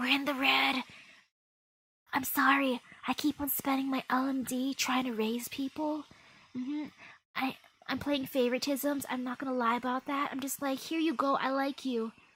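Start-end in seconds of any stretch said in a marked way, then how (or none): 0.0-0.8 hushed whisper, under the breath. Repeating a remark during a game session, whispering. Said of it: "I have to whisper that".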